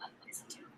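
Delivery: hushed, soft, unvoiced whisper.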